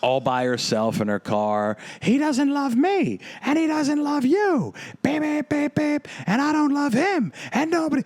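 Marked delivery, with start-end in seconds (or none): 2.0-8.0 put-on shrill, very high drunken wailing screams. Retelling a drunk woman screaming alone in her car at night: imitating a drunk woman screaming. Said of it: "very intoxicated, screaming".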